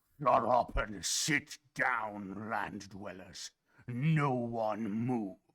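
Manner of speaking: deep, watery, gurgling sea-creature bellow. Game master voicing a fish creature yelling at the land dwellers, deep gurgling yell. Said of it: "deep, gurgling voice yells out".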